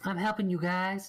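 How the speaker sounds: weird, silly, high-pitched voice. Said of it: "weird South Park there".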